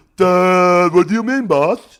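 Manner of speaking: very high, very loud, dopey movie animal voice. Talking about wanting to do voiceovers, a speaker tries a big dumb animal voice. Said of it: "be a big dumb animal in a movie".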